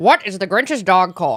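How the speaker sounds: performed, put-on cartoon character voice. Reading a quiz question after the others ask for it: Grinch voice. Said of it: "You have to talk in the Grinch voice".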